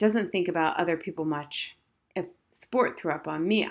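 ordinary delivery

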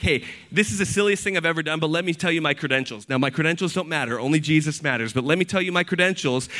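normal talking voice

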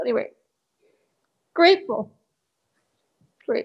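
tearful, voice breaking. A listener tells the host how much their meditations help, crying. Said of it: "I don't know why I'm crying".

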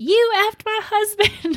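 put-on, very high, shrill, dragged-out hollering. Retelling how Sally attacked a woman, imitating her yelling. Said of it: "the whole time she was yelling".

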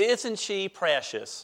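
American South accent on the phrase. Quoting a common saying people use, in a southern accent. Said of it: "maybe I'll do it in my Southern accent".

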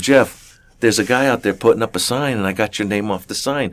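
plain

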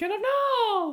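very high, slow, drawn-out squeal.

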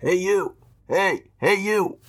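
dampened, muffled voice. Narrating a story; a hidden voice calls out to Kate, muffled voice. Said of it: "a muffled voice".

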